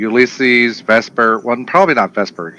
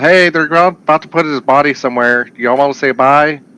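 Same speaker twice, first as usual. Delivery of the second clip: loud yelling, calling out; 3 semitones higher than usual. Calling the other players over to say goodbye: yelling to the group. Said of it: "can I just yell".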